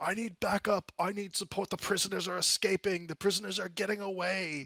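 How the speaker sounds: very high shout. Voicing a guard holding the line, calling up the tunnel: yelling for backup. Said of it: "he begins to also yell".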